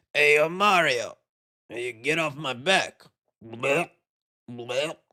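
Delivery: slow, drawn-out, heavy chain-smoker's voice. Imagining how a movie character might sound: Yoshi with a heavy smoker's voice. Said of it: "sounds like a guy who, who smoked fifty cigarettes a day".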